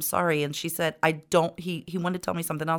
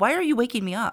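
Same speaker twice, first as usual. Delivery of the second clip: tiny, high, nasty scream in an evil voice; 6 semitones higher, 3 dB louder than usual. Retelling a girl woken up for school screaming at the speaker: imitating a little evil scream. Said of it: "in some little evil voice, she starts screaming at me".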